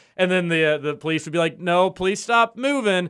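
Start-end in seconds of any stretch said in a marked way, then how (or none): 1.6-3.1 put-on broken English accent, higher, slower. Retelling what a Mexican cop said to a drunk American, in broken English. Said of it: "you're in like broken English".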